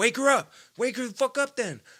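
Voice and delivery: very high, pissed-off, furious yelling outburst. Retelling a fight with a guy whose mom was sleeping: retelling an angry yell. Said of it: "because I'm pissed".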